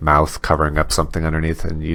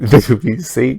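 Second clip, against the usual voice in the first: juvenile, pitched-up and loud; 8 semitones higher, 7 dB louder than usual. Describing a show's scene to another speaker: like a twelve-year-old talking about boobs. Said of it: "I sound like I was, like, twelve years old".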